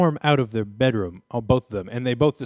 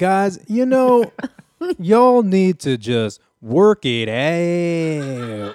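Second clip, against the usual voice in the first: very slow, loud, word stretched out; 5 semitones higher, 5 dB louder than usual. Asked by another speaker to blend two impressions: half Eddie Winslow, half Doctor Phil. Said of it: "half Eddie Winslow, half Doctor Phil".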